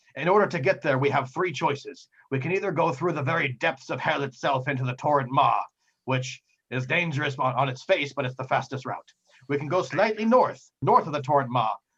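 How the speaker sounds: put-on pirate captain voice. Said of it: "and he says".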